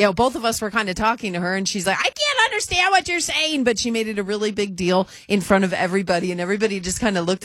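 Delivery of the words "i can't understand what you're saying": put-on, shrill, very high-pitched scolding yell. Retelling how a flight attendant spoke to two passengers, retelling a yell. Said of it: "she yelled at us".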